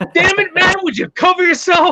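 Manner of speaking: put-on yell, high and loud.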